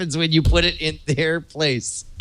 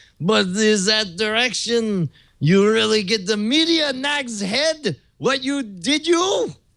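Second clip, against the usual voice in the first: fake French accent, higher pitch; 5 semitones higher than usual. Reading a garbled clue aloud after being asked for a voice: put-on French accent. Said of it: "Do French".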